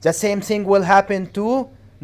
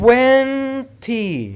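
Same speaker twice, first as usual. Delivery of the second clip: first syllable twen of twenty stressed; 4 semitones higher than usual. Teaching stress in English numbers: twenty stressed on first syllable. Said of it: "You have to put the stress on the first syllable, which is twen".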